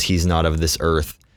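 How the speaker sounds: usual speaking voice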